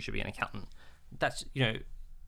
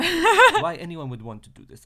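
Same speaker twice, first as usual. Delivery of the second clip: put-on Eastern European accent, pitched very high, very loud; 15 dB louder than usual. Retelling what Vita said about the journaling course, in Vita's Eastern European accent. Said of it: "I'm trying to do her Eastern European accent".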